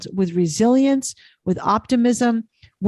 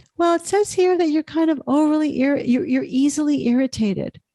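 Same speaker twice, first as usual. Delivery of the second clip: put-on airy, breathy, high young woman's voice; 5 semitones higher than usual. Retelling what a young woman said while debriefing him, imitating her breathy voice. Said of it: "she had a breathy voice".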